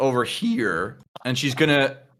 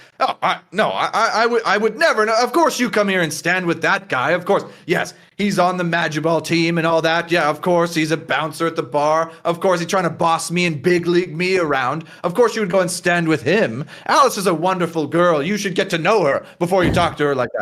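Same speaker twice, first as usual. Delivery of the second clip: put-on tipsy, puffed-up, boastful, drunken rambling; 4 semitones higher than usual. Voicing a drunk, proud character who argues with a woman: drunk, proud character voice. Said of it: "stands up as he's drunk too, and he's super proud".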